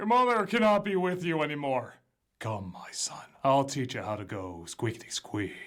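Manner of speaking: cartoon father deer voice. Imagining Bambi's father voiced differently: Patrick Warburton voice as Bambi's father. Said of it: "if he did the voice of Bambi's father".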